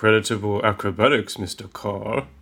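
normal talking voice

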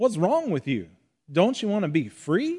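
swooping Southern accent attempt. Retelling what an Army Ranger said to a blind man; put-on Southern accent. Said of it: "That was my best Southern accent I could do".

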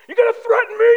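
very loud, very high, shrill, crazed, furious yelling. Speaker retells being threatened over a mask, retelling yelling at a screen. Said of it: "I was yelling at the screen".

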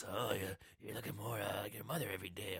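unsettling, real creepy delivery. Retelling a movie scene where a doctor kneels down: imitating a creepy delivery. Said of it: "He does it in a real creepy way".

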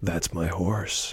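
firm, steady, even voice with no wobble. Retrying the hero's line: Deathstalker line, steady voice. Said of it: "let me try that again without the breaking".

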